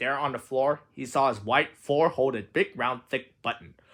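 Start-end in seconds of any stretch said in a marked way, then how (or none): none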